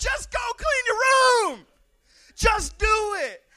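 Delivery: shrill screaming, very high and loud. Acting out a mom's order to clean your room: imitating someone screaming. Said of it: "you're just screaming".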